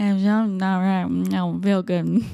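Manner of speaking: put-on slurring of words. Imitating another speaker's slurred phone call during a stroke: imitating someone slurring words. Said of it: "That's what you sounded like".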